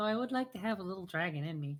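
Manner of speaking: barely audible, held-back half-whisper under the breath. Speaking in character so only those with the best hearing catch it: half-whispering under breath. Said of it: "I just whisper under my breath".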